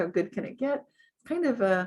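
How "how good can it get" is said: plain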